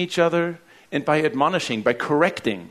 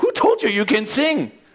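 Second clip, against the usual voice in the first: put-on British accent, pitched a touch higher; 8 semitones higher, 3 dB louder than usual. Retelling a talent show judge's reply, British accent imitating Simon. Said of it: "With a British accent that I can't do".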